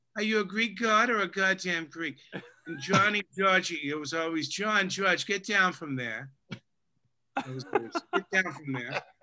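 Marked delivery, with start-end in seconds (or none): 0.2-2.2 put-on broad Boston accent. A listener repeats the guest's mother's saying back in her Boston accent. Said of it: "in her Boston accent".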